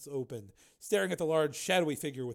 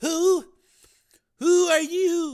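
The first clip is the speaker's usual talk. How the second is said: quavering, very high, very loud, "you" drawn out; 12 dB louder than usual. One of a helpless, quaking group answers the stranger's threat; trembling voice. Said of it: "one of them said in a trembling voice".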